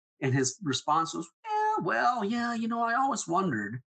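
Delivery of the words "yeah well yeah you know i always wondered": acted nonchalant, offhand delivery, lilting and high. Retelling dad's reply about a possible daughter: imitating dad's nonchalant reply. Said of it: "How can you say that so nonchalantly?".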